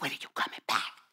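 hushed whisper. Retelling the coach's phone call asking when he's coming back: imitating the coach whispering. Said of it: "He's like whispering".

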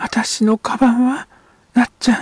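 very high-pitched, fearful, frightened voice. A mother speaks to Nacchan as men carry in a stretcher: frightened. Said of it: "母は怯えたように言った。".

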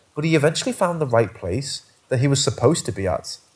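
plain

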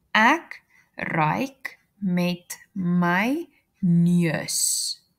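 very slow, drawn-out, repeated along.

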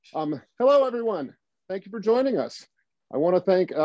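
panting and breathing hard, audibly out of breath. Host welcoming everyone after running back to the house, panting, out of breath. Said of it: "I'm panting because I ran back to the house".

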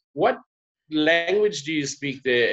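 ordinary talk, nothing marked

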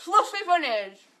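words pushed through cheeks stuffed full. Taking turn three in a fluffy bunnies game, talking with a full mouth. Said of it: "My mouth's getting full already".

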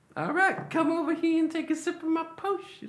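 very high-pitched, sleazy, creepy coaxing voice. A player in a tabletop game offers another player a potion: voice like the Family Guy creep. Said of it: "You sound like the pedophile from Family Guy".

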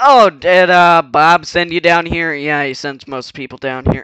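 very low, very loud, booming male-sounding voice. Voicing a character while still figuring out the voice: male-sounding character voice. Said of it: "Why do I sound like a male?".

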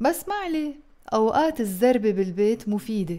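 fast, fluent read-through straight through at full speed.

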